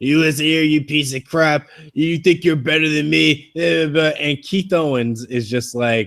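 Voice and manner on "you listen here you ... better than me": play-acted, close, in-your-face mocking taunt. Recounting a wrestling match, acting out Seth Rollins mocking a held opponent. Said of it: "mocking Dean in his face".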